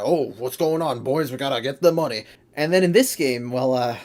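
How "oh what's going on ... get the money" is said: put-on hard-boiled Brooklyn gumshoe detective accent. Describing Vector's voice in Sonic Heroes, doing Vector's Brooklyn detective voice. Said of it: "they're going for a Brooklyn detective kind of".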